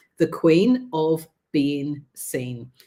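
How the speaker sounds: each word spelled out slowly. Introducing herself to an audience and giving her title, said slowly. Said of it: "I have to say this slowly".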